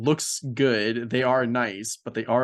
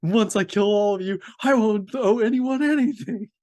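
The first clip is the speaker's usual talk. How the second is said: mock maniacal, insane laughter while talking, higher; 10 semitones higher, 4 dB louder than usual. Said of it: "laughing maniacally like an insane person".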